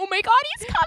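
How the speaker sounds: put-on high, loud, excited childlike shouting and squealing.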